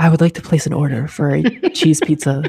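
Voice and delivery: sultry, come-hither delivery. Joking about using that voice in real life, the speaker tries it: whispery, sultry voice. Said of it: "I'm gonna start doing that in real life".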